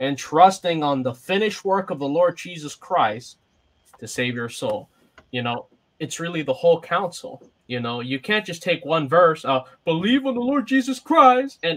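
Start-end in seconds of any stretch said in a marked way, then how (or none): 9.9-11.6 mocking, scornful, pitched-up mimicking voice. Mimicking people who lean on just one verse, mockingly quoting a single verse. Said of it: "I say that mockingly".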